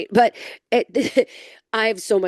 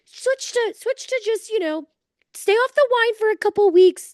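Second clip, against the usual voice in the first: very high, taunting, mocking busybody know-it-all voice. Retelling a dermatologist's advice in a mocking impersonation of an advice-giver. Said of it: "this is my impersonation of literally anybody trying to tell me anything".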